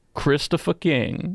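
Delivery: drawled Southern US accent. Trying out a character's name, the speaker says it: southern drawl accent. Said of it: "you say it with like a like a southern drawl".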